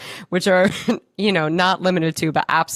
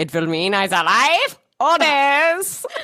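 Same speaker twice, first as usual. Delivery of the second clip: put-on German accent, higher pitch; 9 semitones higher than usual. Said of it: "I sound like Frau Farbissina".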